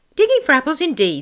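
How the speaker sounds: angry, very high, cross outburst. Narrator reads the rabbit's retort to Pat, angry. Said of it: "said the rabbit angrily".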